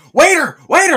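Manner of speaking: wired, rapid, shrill near-scream, very loud and high. Describing a coffee scene with a frantic character, imitating Goldblum nearly screaming. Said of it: "He's nearly screaming".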